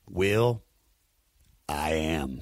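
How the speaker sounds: very low, dead serious deadpan delivery. Retelling a pun said back to a man who asked about a girl: retelling a dead-serious reply. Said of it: "I look at him dead serious".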